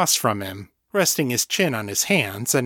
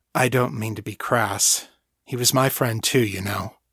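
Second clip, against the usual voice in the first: ordinary delivery, nothing marked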